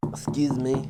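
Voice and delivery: put-on soft mimicked girl's voice. Retelling how a random girl once came up, mimicking a girl's voice. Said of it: "So I'm mimicking her".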